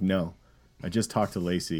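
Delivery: ordinary talk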